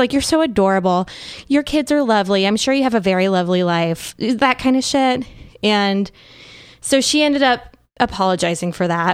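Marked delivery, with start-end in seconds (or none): 0.1-4.1 put-on condescending tone. Retelling her replies to a commenter: imitating a condescending tone. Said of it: "she was just very condescending".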